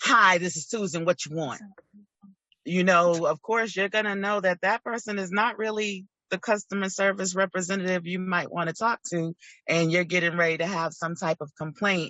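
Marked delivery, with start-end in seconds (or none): 0.0-1.6 put-on rude clerk voice. Describing a call to store customer service, the rep answers; mock-rude Susan. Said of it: "Susan's body language with attitude".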